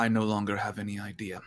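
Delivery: very grave, solemn, somber tone. Describing a character's scene, then speaking her line in a somber voice. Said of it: "in a very kind of almost somber voice".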